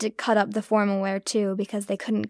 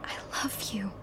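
whispering, quieter; 12 dB quieter than usual. Recalling speaking to him while he sleeps: retelling a whisper. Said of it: "I'm whispering".

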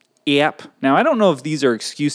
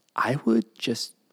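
soft, partly unvoiced whisper. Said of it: "Okay, it's a secret".

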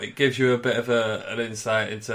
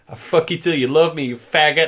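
put-on lisping voice, higher and louder; 6 semitones higher, 8 dB louder than usual. Retelling a limo outburst at a journalist: imitating Mike Tyson's lisp. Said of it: "with his lisp and his fat head and he goes".

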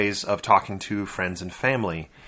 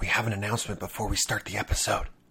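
hushed, much quieter whisper; 6 dB quieter than usual. Host opening the episode with an announcement to listeners: whispering. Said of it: "Why are you whispering?".

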